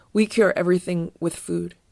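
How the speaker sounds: plain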